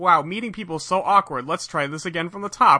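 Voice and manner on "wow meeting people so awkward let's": ordinary delivery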